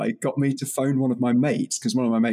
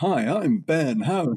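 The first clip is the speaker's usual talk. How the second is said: very slow, fake, cheesy radio DJ drawl; 4 semitones higher than usual. Recalling how they talked on a local radio show, in a fake DJ voice. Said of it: "I did this fake DJ voice".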